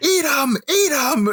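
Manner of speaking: loud, high-pitched screaming.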